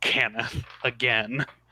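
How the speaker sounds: low, growling snarl on the word. Voicing a character who bares her teeth: growl.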